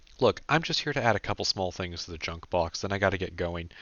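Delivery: ordinary delivery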